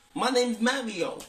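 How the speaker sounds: put-on Brooklyn New York accent. Guessing how the film's Mario might talk: Brooklyn accent. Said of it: "is he gonna sound like he's from New York?".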